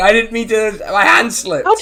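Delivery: all-out, high-pitched screaming. Describing a gladiator who accidentally decapitated his opponent, retelling his scream. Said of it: "You can hear him screaming from the thing".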